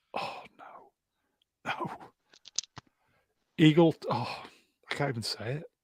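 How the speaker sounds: slow, crushed, devastated voice, words failing. Reading out poll results, the speaker reacts to a third-place finish: mock devastated. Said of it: "Can you hear the devastation in my voice?".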